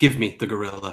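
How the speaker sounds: resonant, low, distant-sounding, almost echoing call. Talking through a game with a teammate, say it in an almost echoing voice. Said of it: "in a voice that almost echoes".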